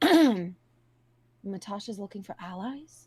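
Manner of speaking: very slow, deliberate, drawn-out delivery. Asking in character while peeking over a companion's shoulder: speaking low. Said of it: "I'm gonna keep my voice low here".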